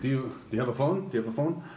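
put-on Irish accent. Retelling a stranger who came over asking for a phone, heavy Irish accent. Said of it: "speaking in a really heavy Irish accent".

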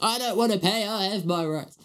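high-pitched yelling voice. Speaker acts out a customer's reply about paying, imitating a yelling customer. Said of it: "someone yelling like that through the window".

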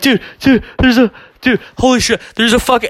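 high, panicked, blurted babbling.

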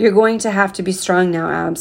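ordinary delivery, nothing marked

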